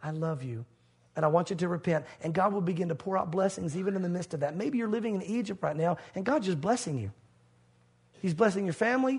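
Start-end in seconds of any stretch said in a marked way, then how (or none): 0.0-2.0 acted gentle, tender voice, much lower. Speaker voicing God coming to the listener, quoting in a gentle voice. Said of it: "in a gentle voice comes to you and says".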